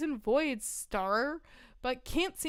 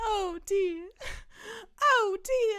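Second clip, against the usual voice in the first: put-on Southern belle accent, high and slow; 8 semitones higher, 5 dB louder than usual. Speaker announces a switch to playing a Southern belle, Southern belle voice. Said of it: "Now I'm a Southern belle".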